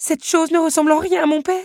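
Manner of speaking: shrill, very high, loud, choked-out cry. A daughter sees that the automaton only posed as her father, choking out the words. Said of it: "s'étouffa Belle".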